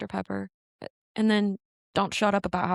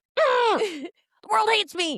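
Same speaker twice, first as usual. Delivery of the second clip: very high, loud drawn-out mocking complaint; 13 semitones higher, 5 dB louder than usual. Imitating the other speaker complaining about their stomach: imitating the other speaker complaining. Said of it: "And so you're like".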